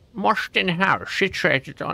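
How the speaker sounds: put-on Scottish accent. Reading a game's place description aloud: attempted Sean Connery Scottish accent. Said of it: "that's like Scottish, right?".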